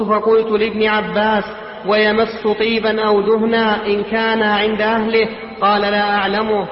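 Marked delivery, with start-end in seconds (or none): none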